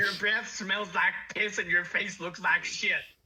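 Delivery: loud, high, taunting, mocking jeer at close range. Casting Vicious Mockery at the NPC: mocking insult. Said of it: "I'm gonna cast Vicious Mockery".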